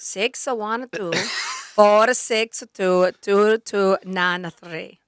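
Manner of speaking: put-on Italian accent, dragged out very slowly. Asked to try reading a number in a put-on Italian accent. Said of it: "Should I try it in my in an Italian accent?".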